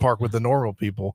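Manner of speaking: ordinary delivery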